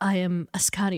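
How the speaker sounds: ordinary talk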